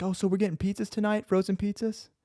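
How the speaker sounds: sweet little voice. Recounting a scary moment, speaker mimics her coming back, imitating a little sweet voice. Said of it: "come back in her little sweet voice".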